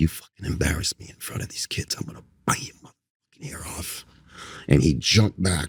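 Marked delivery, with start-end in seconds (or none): 0.0-4.0 soft, hushed whisper. Retelling a threat whispered in a student's ear: retelling a whisper. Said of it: "I whispered in his ear".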